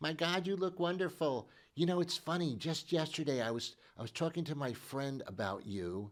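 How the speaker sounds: rushed, over-familiar woman's voice, fast and high. Acting out a woman greeting an old acquaintance after ten years, imitating a woman's voice. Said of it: "that's my woman's voice".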